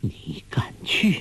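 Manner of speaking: shaky, wavering, trembling, quavering voice. A martial sister answers her junior brother's invitation to visit their master; trembling voice. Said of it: "梅超风颤声说".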